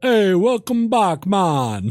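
put-on Jamaican accent, very drawn out, slow and high. The speaker quotes a game's troll character greeting players after death, in a Jamaican accent. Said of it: "He talks with a Jamaican accent".

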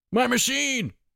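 piercing, shrill screech, very high-pitched. Narrator reading a character's line after his rocket lands in the water, shrill screech.

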